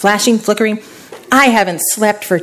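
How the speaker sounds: ordinary delivery, nothing marked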